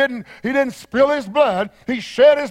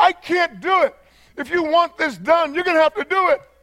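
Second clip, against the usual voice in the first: high, exasperated, frustrated shout, at wit's end; 5 semitones higher than usual. Retelling crying out to God in frustration: retelling a frustrated shout. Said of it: "I was shouting".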